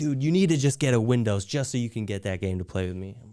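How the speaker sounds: plain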